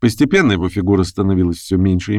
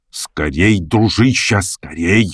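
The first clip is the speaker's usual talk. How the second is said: grumbled under breath, urgent and short. Narrator reads him speaking to the narrator while gathering their things, muttered. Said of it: "буркнул он".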